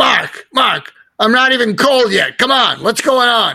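put-on Brooklyn accent. Retelling a phone call with Larry King after a podcast, Larry King's Brooklyn voice. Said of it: "in his Brooklyn voice".

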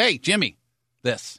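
pushy, rude, demanding, bossy tone. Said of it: "It was talking to somebody and just".

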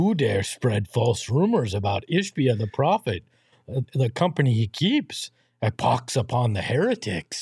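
comic puppet-style monster voice. Reading a viewer's super chat aloud on stream, in a Cookie Monster-like voice. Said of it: "Why is it Nookie Monster".

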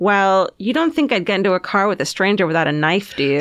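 normal talking voice

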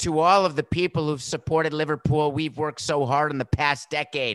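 ordinary talk

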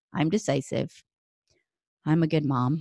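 without conviction. Podcast host showing how not to read her affirmations, without conviction. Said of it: "I don't just go".

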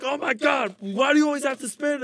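exasperated, angry, very high voice. Retelling the dad's reaction while cooking together: imitating an angry dad. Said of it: "get so angry".

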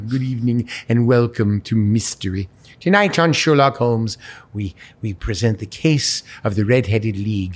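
sweeping delivery, rising and falling in pitch. Showing the higher voice blended into the character: Vincent Price voice. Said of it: "then Vincent Price is about here".

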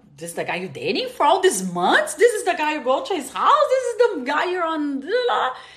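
wide-pitched, incredulous tone.

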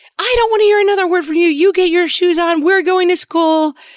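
play-acted crazy rage voice, very high screaming. Retelling yelling at a kid to get ready: imitating own crazy rage scream. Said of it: "my screaming in my crazy rage voice".

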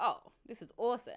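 ordinary delivery

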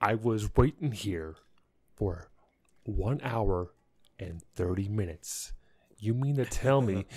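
put-on measured sternness through closed teeth, words enunciated. Speaker retelling confronting them after waiting an hour and a half, retelling stern, enunciated words. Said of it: "I did talk sternly. And I enunciate every word".

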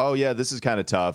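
ordinary talk

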